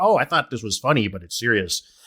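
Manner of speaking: ordinary talk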